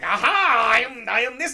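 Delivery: slow, big, belted delivery. Imitating an actor's accent in a movie: Triumph the Insult Comic Dog voice. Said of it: "he's literally doing Triumph the Insult comic talk".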